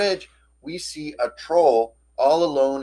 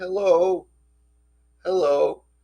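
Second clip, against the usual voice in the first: sad, dejected, mournful, forlorn troll voice; 5 semitones higher than usual. Retelling a troll floating under a bridge greeting the group, imitating a sad troll. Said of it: "that fool sounds sad".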